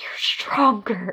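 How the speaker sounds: hushed soft whisper. Recalling sitting on the couch during a scene, speaker repeats their reply: whispering. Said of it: "just whispering".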